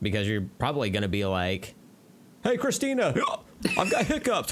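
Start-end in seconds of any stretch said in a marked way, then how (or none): 2.4-4.5 very high, swooping, silly put-on goofy voice. Imagining someone with hiccups calling out to Christina; goofy impression. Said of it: "That was a good goofy impression out of the blue".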